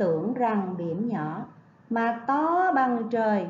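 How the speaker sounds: to bằng trời said with stress. Reading a poem line aloud to the class: stress on to bằng trời. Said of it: "Và nhấn giọng từ to bằng trời".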